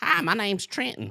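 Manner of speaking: put-on high cartoon child voice. Showing how an inmate talked: Bobby Hill voice. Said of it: "it sounds just like that".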